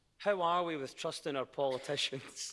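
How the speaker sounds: words bubbling with laughter while talking. Asking a guest about trust in politicians, laughing while talking. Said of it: "I said that with a laugh in my voice".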